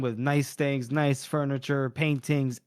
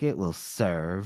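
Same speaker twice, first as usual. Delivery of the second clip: mock pissed-off, grudging, angry tone; 8 semitones lower, 3 dB quieter than usual. Retelling a character's cold reply, imitating an angry retort. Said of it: "She's fucking pissed off".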